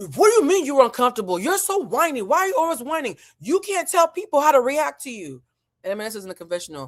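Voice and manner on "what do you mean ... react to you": shrieking, high-pitched, whiny, accusing screaming. Retelling an argument where one person tells another off: imitating someone screaming. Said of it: "Bose is screaming at me".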